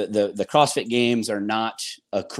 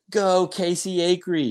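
put-on child's cheering yell, much higher, slower; 9 semitones higher than usual. Retelling how their son cheers for them at events, imitating their son yelling. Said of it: "he's yelling like".

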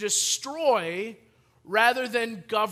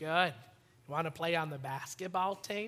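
very quiet, slow, low, peaceful and hushed; 5 semitones lower, 10 dB quieter than usual. Retelling meeting Tyler as a freshman: imitating Tyler's calm, peaceful voice. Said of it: "Can You speak a little faster".

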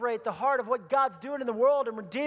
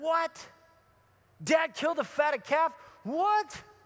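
put-on indignant, outraged outburst of angry disbelief; 4 semitones higher than usual. Retelling the parable, acting out the older brother: imitating an angry older brother. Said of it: "He gets mad".

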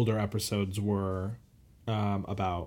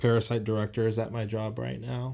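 plain

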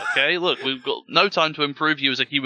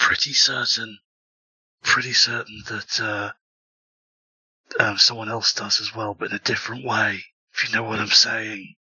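whispered speech, lower pitch; 4 semitones lower than usual. Telling another character in a game something secret: whispering in character. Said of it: "I'm, like, whispering".

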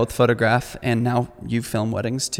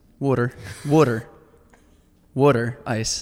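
slow, drawn-out put-on Philly accent on water. Showing how people from philly and jersey say water: imitating a philly accent. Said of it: "That's how they say it".

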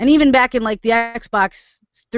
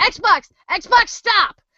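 very high, frantic, panicked scream; 12 semitones higher than usual. Retelling screaming at an Xbox that won't stop playing; retelling screaming at the Xbox. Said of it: "I'm like screaming".

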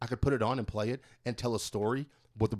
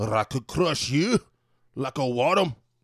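bad, weak put-on Scottish accent, raised voice; 3 semitones higher, 7 dB louder than usual. Quoting a great line from a movie; bad scottish accent. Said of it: "I can't really do a good Scottish accent".

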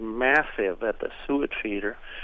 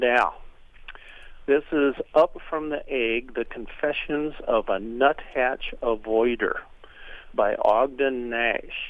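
ordinary talk, nothing marked

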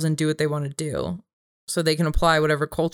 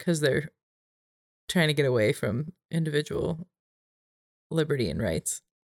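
dry, mocking, tongue-in-cheek sarcastic tone; 5 dB quieter than usual. Replying in a debate about cultures and individual liberty: sarcastic. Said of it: "I'm being sarcastic".

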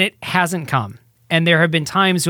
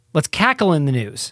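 plain

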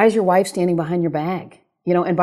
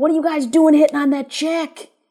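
yelling, higher in pitch; 9 semitones higher than usual. Retelling how the manager yelled at players during batting practice: imitating Rungi yelling. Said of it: "he starts yelling at him".

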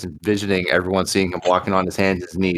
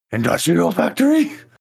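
very high, rough, raspy cartoon dog voice; 10 semitones higher, 3 dB louder than usual. Voicing a character asking a question: attempted Scooby-Doo impersonation. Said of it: "in a attempt at a Scooby-Doo impersonation".

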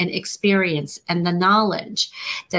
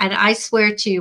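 normal talking voice

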